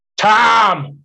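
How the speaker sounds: sour, gruff, scowly voice, drawn out. Retelling a man at a baseball game calling out "tom": mock-scowly voice on "tom". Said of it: "just like that in a real scowly voice".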